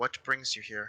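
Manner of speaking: very soft, hushed speech. Retelling how a man addresses the group without looking at them, very soft voice. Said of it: "in a very soft voice talking".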